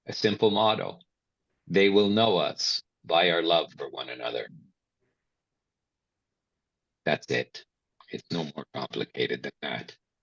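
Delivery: on the verge of tears. Sharing a personal motto about serving the community, on the verge of tears. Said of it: "And now I want to cry".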